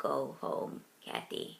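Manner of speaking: hoarse, rough, rasping grunt. Reading a story aloud, voicing Harold sending Kathy home: hoarse grunt. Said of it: "he grunted hoarsely".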